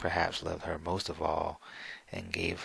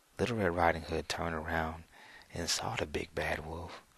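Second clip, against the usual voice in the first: plain reading voice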